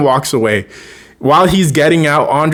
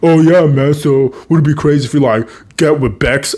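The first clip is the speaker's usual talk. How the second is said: put-on, played-up dumb boy voice. Retelling how someone mimicked a guy, in a dumb boy voice. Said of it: "She does a dumb boy voice".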